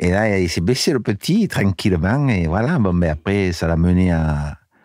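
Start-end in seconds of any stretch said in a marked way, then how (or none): 0.4-2.3 put-on Nice accent. Telling a story set in Nice: Nice accent. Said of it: "Je prends un accent de, du Ni- de Nice".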